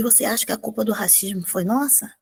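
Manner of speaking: soft, hushed, under the breath. Retelling own question to the woman: retelling own soft-spoken words. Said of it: "Aí eu pra ela baixinho".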